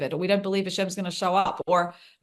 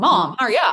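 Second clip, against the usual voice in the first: put-on acted, loud, angry, impatient, annoyed crying child whine; 4 semitones higher, 7 dB louder than usual. A mother retells her daughter crying for milk, imitating a crying, annoyed child. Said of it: "like crying with a little bit of anger, annoyance".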